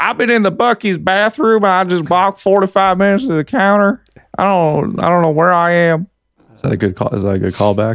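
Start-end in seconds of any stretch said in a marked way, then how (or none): 0.0-6.1 terrible, put-on Virginia Southern US accent. Doing a callback bit in a terrible virginia accent. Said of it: "It was a terrible, uh, Virginia accent".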